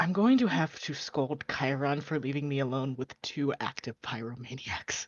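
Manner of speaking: quiet, under-the-breath muttered grumble. Voicing a character who complains about pyromaniacs: muttering under his breath. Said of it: "say in Elvish under his breath".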